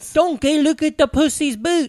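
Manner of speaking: poorly done put-on ogre voice, pitched high. Trying a film character's line after the other speaker: bad Shrek impression. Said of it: "we both do bad Shreks".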